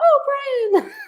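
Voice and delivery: mock, very high, shrill cheering yell. Retelling how Mom sounded at a state tournament: imitating Mom yelling.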